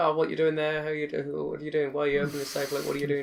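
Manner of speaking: put-on inquisitive mouse voice. Retelling a story where a mouse finds a fox robbing a safe, imitating Sniffles' inquisitive chatter. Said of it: "his usual inquisitive self".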